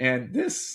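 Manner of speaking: voice cracking and breaking on the words. Making a point about football, the speaker's voice cracks, voice cracking. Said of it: "a good voice crack there".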